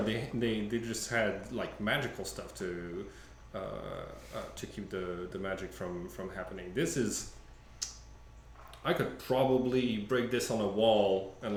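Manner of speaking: usual speaking voice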